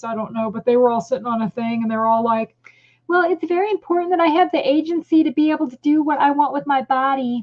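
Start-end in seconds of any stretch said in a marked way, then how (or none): 3.1-7.4 derisive, mocking put-on parody voice. Retelling what a group of women sitting together said: mocking imitation of the women. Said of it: "And they all talk like this too".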